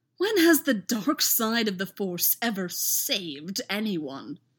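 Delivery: scornful, contemptuous, dripping with scorn. Answering another man's defensive reply, a man speaks scornfully. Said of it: "apparently unable to keep the scorn out of his voice".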